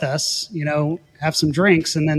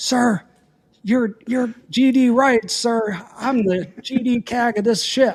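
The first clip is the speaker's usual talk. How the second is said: put-on officer screaming, high and drawn out; 7 semitones higher than usual. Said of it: "screaming at me".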